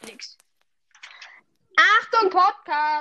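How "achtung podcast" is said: loud hollering, shouting call. Speaker warns family members downstairs not to come in, shouting downstairs. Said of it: "ich muss kurz runterrufen".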